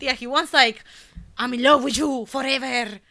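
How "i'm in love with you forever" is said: higher, louder cartoon skunk French accent. Telling Cynthia what he wants from a woman, in a Pepé Le Pew voice. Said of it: "You sounded like that skunk, that cartoon skunk".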